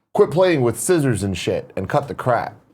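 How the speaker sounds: ordinary delivery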